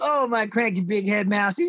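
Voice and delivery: put-on irritating, obnoxious girlish voice. Describing a series character who nicknames Brain, in her obnoxious loud voice. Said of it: "this really obnoxious loud voice".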